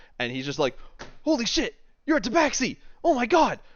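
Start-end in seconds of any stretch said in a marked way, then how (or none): 1.2-3.5 overjoyed star-struck delight, very high and loud. Voicing a character who meets the adventurers: overjoyed Swain voice. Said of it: "the happiest person on the planet".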